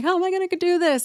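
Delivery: high, tearful, weepy, sobbing, pleading cry. Retelling how upset moms sound before alternating holidays: imitating crying moms. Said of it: "really crying".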